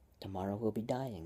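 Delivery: ordinary delivery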